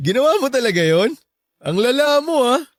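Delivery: high, giggly speech, laughing through the words. Reacting after someone confesses to trying to make them jealous, laughing while talking. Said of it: "Bakit ka tumatawa dyan?".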